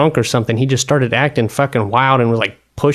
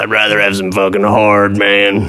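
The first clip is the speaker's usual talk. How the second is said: put-on raspy throat-tube-like voice, lower pitched; 4 semitones lower than usual. Retelling what a guy said, mimicking him: imitating a smoker's throat-tube voice. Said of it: "Sounds like he's got one of those fucking tubes stuck in his throat".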